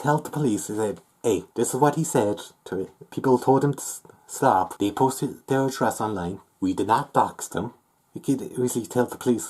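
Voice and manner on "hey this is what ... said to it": normal talking voice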